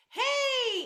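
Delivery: bright, light, very high, very loud drawn-out call. Demonstrating a greeting called to someone across the street: light and bright call. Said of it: "in that light and bright way".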